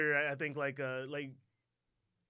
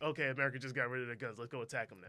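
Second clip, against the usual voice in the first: plain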